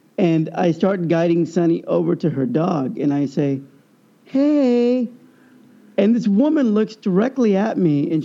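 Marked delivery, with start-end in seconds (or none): 4.3-5.1 light, high voice with the word "hey" drawn out. Retelling greeting a cute little dog: retelling own lightened voice. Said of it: "I lighten my voice".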